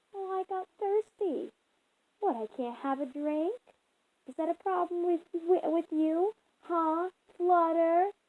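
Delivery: taunting, needling, mocking tone. A girl answers the one questioning her leaving her room, in a mocking voice. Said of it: "she said in a mocking voice".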